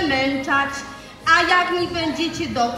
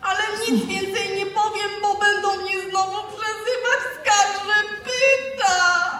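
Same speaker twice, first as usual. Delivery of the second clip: sad, tearful crying voice; 4 semitones higher than usual. Kacper, asked by his mother why he is crying, answers her: crying, sad. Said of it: "Płaczę, bo mi smutno".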